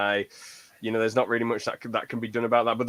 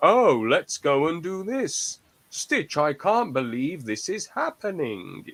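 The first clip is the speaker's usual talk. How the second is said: put-on patronizing, high, sing-song children's TV voice; 6 semitones higher than usual. Mocking how kids' shows talk down to the audience: mock kid-show voice. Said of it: "one of those kid shows who's like".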